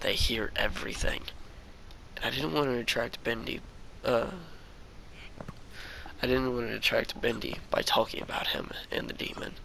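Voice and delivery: plain reading voice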